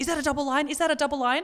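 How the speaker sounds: fast, frantic, panicked, disbelieving delivery. Retelling seeing the faintest line on a test, acting out freaking out. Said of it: "I'm freaking out".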